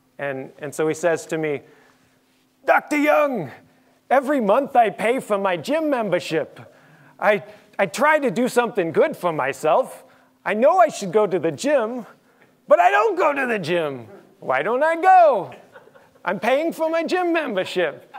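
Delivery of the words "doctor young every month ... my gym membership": put-on strong New York accent, pitched up. Retelling what the man in the next seat said, in a fake new york accent. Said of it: "[FAKE NEW YORK ACCENT]".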